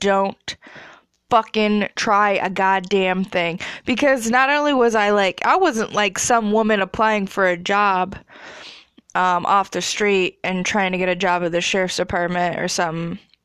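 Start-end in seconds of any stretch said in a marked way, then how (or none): 0.0-3.6 put-on slow, grave, stern, dead-serious tone. Retelling a deputy's warning to visitors in a cell block: imitating someone being real serious. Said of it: "was real serious".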